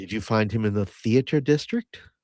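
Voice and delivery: hushed, quiet half-whisper. Speaking in character to a companion about a newcomer: quiet half-whisper. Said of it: "I quietly whisper to Cass".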